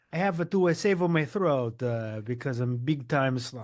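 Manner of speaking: put-on Italian accent. Replying to teasing about a sore throat, in a put-on italian accent. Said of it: "I'm trying to find an Italian accent".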